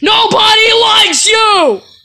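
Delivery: very high, shrill, high-pitched shouted yell. Acting a skit as Mario, answering Luigi: yelling. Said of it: "Stop yelling at me!".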